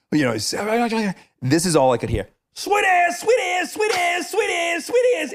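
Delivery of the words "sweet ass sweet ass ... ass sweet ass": put-on mock screaming, pitched much higher. A man on shore screams at the speaker in a sinking boat; retelling a scream. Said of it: "And he's screaming".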